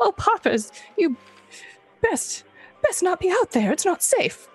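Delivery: tiny, small, high little voice. Voicing a character speaking to the hero Poppers: little voice. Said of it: "you might hear this little voice again".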